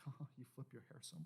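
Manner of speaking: very quiet breathy whisper, half giggling. Retelling how a man at a drum lesson would always react, imitating his whispery voice. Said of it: "he had a whispery voice like that".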